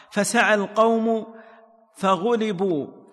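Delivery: ordinary delivery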